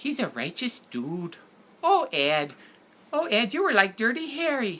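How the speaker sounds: put-on very high-pitched, swooping Minnesota accent. Describing actress Edie McClurg's film roles, then doing an Edie McClurg impression. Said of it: "like a real Minnesota kind of Milwaukee".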